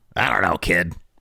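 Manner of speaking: grouchy, grumpy, dismissive dad voice. Imitating a dad answering his kid's question: imitating a kid's grumpy dad. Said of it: "That's my impression of that kid's dad".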